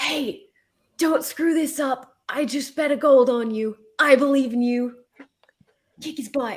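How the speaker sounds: theatrical stage whisper, loud and high-pitched. Going up to the platform to encourage a fighter: stage whisper. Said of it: "stage whisper to Anala".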